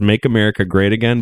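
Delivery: normal talking voice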